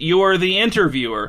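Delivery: ordinary talk, nothing marked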